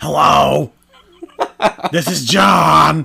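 put-on loud, slow, bored voice. Retelling overhearing a Walmart worker answering the phone, imitating John's bored greeting. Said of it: "he's so uninterested in his job".

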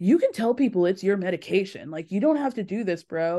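imitated whispering voice. Retelling a scene, imitating someone whispering. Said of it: "Tom starts whispering".

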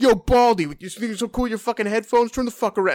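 mock furious, high, snapping tone. Retelling how Alex snapped at a man with headphones: imitating Alex snapping angrily. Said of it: "Alex just like snaps at him and goes like".

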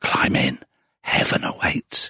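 slow, drawn-out whisper, each word given time. Retelling pointing to an open suitcase for a candidate: retelling a whisper. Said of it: "pointed to an open suitcase and whispered".

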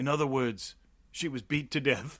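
put-on ridiculous, low Louisiana accent with a drawl. Retelling a cop's reply to a coroner in a scene: Steven Seagal Louisiana accent. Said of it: "Steven Seagal's fucking ridiculous Louisiana accent".

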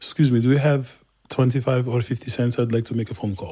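put-on strong, thick Turkish accent. Acting out a man asking for change to make a phone call: strong turkish accent. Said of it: "it's Turkish".

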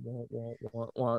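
low, soft, droning wah-wah sound.

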